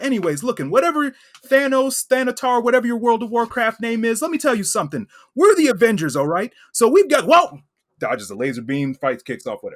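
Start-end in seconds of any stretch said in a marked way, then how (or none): 0.0-7.3 put-on nervous teen superhero voice, higher and louder. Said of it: "my own Peter Parker voice".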